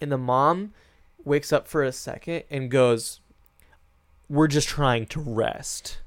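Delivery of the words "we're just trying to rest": put-on snarky voice. Retelling what the mom says when woken: imitating a snarky remark. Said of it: "very snarky".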